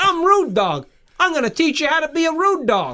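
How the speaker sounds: put-on very high voice with Brooklyn accent. Showing how a man who ran an auto body shop talked, in a brooklyn accent. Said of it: "He had a Brooklyn accent".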